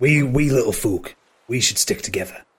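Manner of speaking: sly, secretive, conspiratorial stage whisper. Voicing a character who pulls a player close: conspiratorial whisper. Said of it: "and whispers in Treble's ear".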